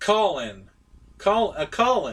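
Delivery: homemade, put-on British accent. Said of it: "my British accent interpretation".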